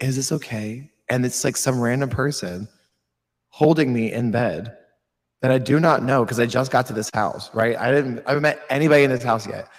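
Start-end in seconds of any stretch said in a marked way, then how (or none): 0.0-0.9 put-on whisper. Retelling a stranger in bed whispering in the ear: imitating a whisper. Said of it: "I hear a whisper in my ear of somebody going".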